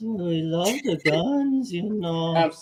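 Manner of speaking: put-on comic cartoon character voice. Urged to do the line as Slowpoke Rodriguez, in a Slowpoke Rodriguez voice. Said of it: "do it at least in the uh, voice of, oh, Slowpoke Rodriguez".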